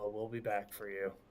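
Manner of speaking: low, quiet mutter under the breath. Leaving the fortress, muttering a promise to the dinosaur: muttering under breath. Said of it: "I'm just gonna mutter under my breath".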